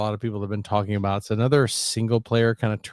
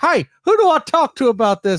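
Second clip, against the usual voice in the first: put-on very high, very loud, shrill, swooping frantic old lady; 8 dB louder than usual. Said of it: "She's like".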